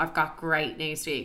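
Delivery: ordinary delivery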